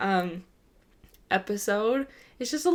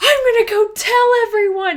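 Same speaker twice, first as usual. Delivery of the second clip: put-on shrill furious childish outburst. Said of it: "And he is so, like, mad".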